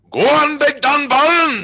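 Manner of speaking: shrill, loud, high Scottish yell. Recalling a man behind them at the game: retelling a scottish man's scream. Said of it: "a big Scottish man behind us who'd stand up and go".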